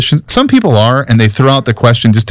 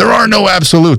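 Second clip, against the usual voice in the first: high, huffy, indignant, affronted angry tone; 7 semitones higher than usual. Speaker retelling a man who protested to him that all truth is relative, mock-indignant. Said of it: "almost kind of in an indignant, angry tone".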